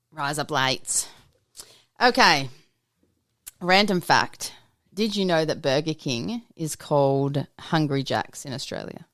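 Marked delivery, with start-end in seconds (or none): 0.2-1.1 Australian accent, lower and quieter. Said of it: "You sound too American".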